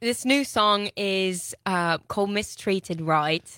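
slow, drawled, put-on Australian accent.

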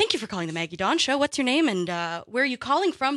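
fast, overly cheery, far-too-chipper phone voice. Producer filling in for the host recreates how she answers callers, far too chipper. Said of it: "heard a far too chipper voice say".

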